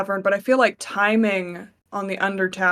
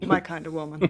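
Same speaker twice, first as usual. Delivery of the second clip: quiet mutter, lower and quieter; 4 semitones lower, 5 dB quieter than usual. Voicing a character's comment about a woman, muttered under his breath. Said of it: "just under his breath".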